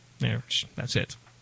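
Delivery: ordinary delivery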